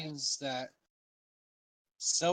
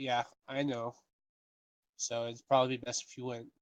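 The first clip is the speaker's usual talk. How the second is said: ordinary talk, nothing marked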